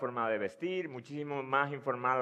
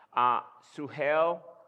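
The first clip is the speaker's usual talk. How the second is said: put-on American accent; 5 dB louder than usual. Retelling how the sister-in-law's boyfriend addressed the father-in-law: imitating an american accent. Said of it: "en su acento americano decir".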